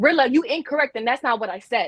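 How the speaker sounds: blunt, rude, combative, confrontational tone. Speaker demonstrating to women how tone matters when talking to a man, rude confrontational tone. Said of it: "but they both came off differently".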